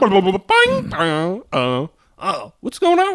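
swooping cartoon creature noises and chatter. Retelling strange visions after taking NyQuil: cartoon creature voice. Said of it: "cartoon creatures and cartoon noises".

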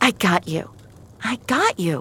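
soothing, reassuring voice. Narrator voicing Finch after pulling a girl through a shattered window, most consoling voice. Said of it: "Finch said in her most consoling voice".

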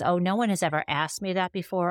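usual speaking voice

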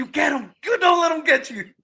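shrill screaming, pitched way up and loud. Recalling watching a player's shot from the couch, retelling screaming at the TV. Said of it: "I was screaming in my couch".

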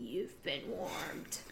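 bad, breathy, put-on whispered character voice. Acting out what he says when someone gets on his nerves: horrible put-on voice. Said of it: "That's a horrible voice".

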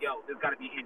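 quiet half-whispered voice. Retelling what people said as picks went by: imitating people half-whispering. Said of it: "there were the whispers".

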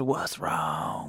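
put-on breathy, whispered voice with a Texas accent. Imitating a whisper heard on a ghost recording: Matthew McConaughey Texas voice. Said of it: "sounds straight up like some Matthew McConaughey, Texas".

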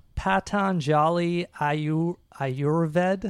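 very slow, cautious, careful, sounded-out pronunciation. Attempting to pronounce a company name, very slow and careful. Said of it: "you did it so slow".

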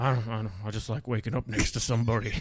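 sinister, creepy, killer-like menace. Showing a second way to say the same idea: creepy, murderer-like delivery. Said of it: "That's a murderer".

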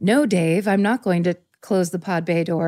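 put-on sci-fi movie robot voice. Showing an idea for a recording: sci-fi movie robot voice. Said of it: "the robot voice in, like, a sci-fi movie".

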